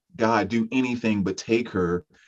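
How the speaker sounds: normal talking voice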